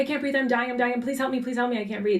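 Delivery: mock sobbing, high, rushed, panicked pleading tone. Retelling how she felt she couldn't breathe: retelling own panicked sobbing. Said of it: "I started panicking and s-, sobbing".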